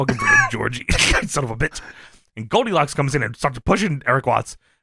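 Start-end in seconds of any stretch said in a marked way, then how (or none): 0.0-1.8 put-on low, grim, dead-serious tone. Recounting a confrontation, the speaker acts out a man's reply, retelling a serious warning. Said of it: "Eric Watts gets real serious".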